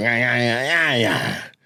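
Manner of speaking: soft, low speaking rhythm. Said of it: "had the cadence of".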